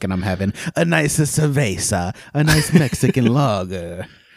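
playful fake Italian accent. Podcast host tells the listeners what she's drinking, in a joking Italian accent. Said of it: "I don't know why I did it Italian".

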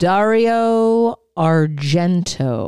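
slow, drawn-out put-on Texas drawl. Saying a director's name the way Joe Bob says it: slow and Texan. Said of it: "Can we say it how Joe Bob says it?".

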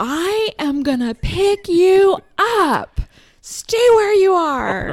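very high, slow, loud aggressive shout. Retelling what the speaker shouted at a man about getting in the car: retelling an aggressive scream. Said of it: "So aggressive".

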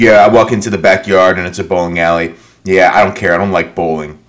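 flat, emotionless robotic monotone. Retelling diary-room lines, imitating Cody's robot voice. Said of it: "doing this impression of a robot".

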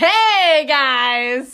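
long drawn-out hey. Imitating the other speaker's way of talking: imitating a loud voice with no inside voice. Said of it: "there's no inside voice".

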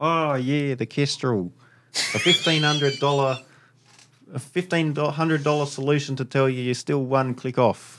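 put-on clumsy Canadian accent. Quoting what someone said about the Kestrel: bad Canadian accent. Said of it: "you can't do a Canadian accent".

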